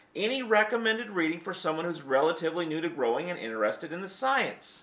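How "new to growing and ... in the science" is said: ordinary talk, nothing marked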